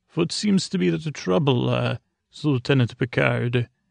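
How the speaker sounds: fake German accent voice. Retelling a scene where Q, dressed as a doctor, greets Picard, Q in a fake German accent. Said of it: "in like a fake German accent".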